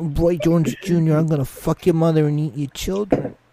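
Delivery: low put-on voice. Quoting a threat to Roy Jones Junior: low Mike Tyson voice. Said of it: "Mike goes down real low here and talks like this".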